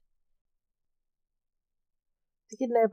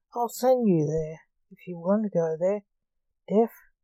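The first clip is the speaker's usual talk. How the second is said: ordinary delivery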